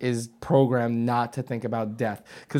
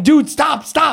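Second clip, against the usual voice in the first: very high, shrill, loud screaming cry; 13 semitones higher, 10 dB louder than usual. Recounting a crash where the driver lost control, retelling a scream at him. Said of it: "So I'm screaming".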